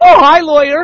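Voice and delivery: very high, loud, giggly squealing voice. Retelling how the lawyer greeted them, imitating a giggly voice. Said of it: "in that kind of a voice, all giggly".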